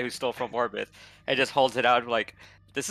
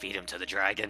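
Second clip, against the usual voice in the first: soft, half-whispered, under the breath; 4 semitones lower, 7 dB quieter than usual. Voicing Tess half-whispering about feeding the thief to the dragon: Tess half-whispering. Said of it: "whispers out".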